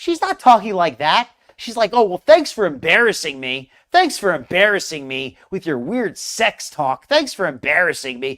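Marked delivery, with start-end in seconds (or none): 1.9-8.4 acted-out irritated, annoyed scolding tone. Acting out her reply, sounding like a boss upset at an employee. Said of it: "She sounds like like a, like a boss who's upset at their employee".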